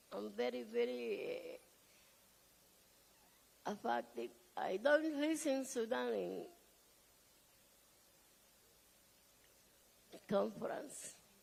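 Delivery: speaking while crying. Speaker at a conference apologizing while affected, crying. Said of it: "I'm sorry, I'm crying".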